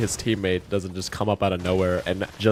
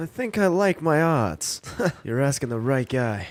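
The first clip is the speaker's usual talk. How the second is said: pitched-up anime main character hero voice; 5 semitones higher than usual. Playing a game with teammates, anime character voice. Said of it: "Why he talking like an anime character?".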